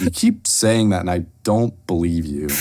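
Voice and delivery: low, lilting voice with a note of doubt. Retelling own past reply to a taunt, retelling an uncertain lilt. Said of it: "that lilt of like uncertainty in my voice".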